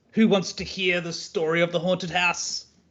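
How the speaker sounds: loud yelling. Pulling out the loot and calling to the group, yelling in a loud voice. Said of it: "I yell in a loud voice".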